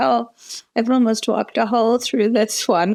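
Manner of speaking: put-on acted, pitiful, high-pitched small-child voice. Retelling what the daughter said while putting on her shoes: imitating a sad child. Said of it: "Like a sad little".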